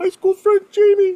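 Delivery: very high, very loud falsetto head voice. Greeting his high school friend on the episode, in a falsetto. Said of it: "test you with a new falsetto".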